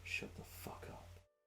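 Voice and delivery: angry, whispered grumbling mutter. Acting out a character who glares and mutters: muttering angrily. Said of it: "Val is just there going like".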